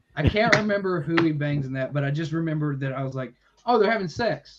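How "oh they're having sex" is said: normal talking voice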